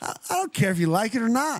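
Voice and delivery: very high-pitched put-on voice. After citing a playbook, slipping into a Gruden impression. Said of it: "That was a good Gruden right there".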